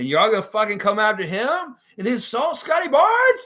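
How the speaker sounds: very high-pitched, shrill, rising fake outraged indignation. Ranting at online trolls who come after Scotty Barnes, with fake indignation. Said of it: "I had to do some fake indignation".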